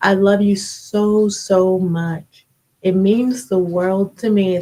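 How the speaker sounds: voice fighting off crying, holding back tears. Speaker thanks people who prayed for them, trying not to cry. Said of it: "I'm trying not to cry".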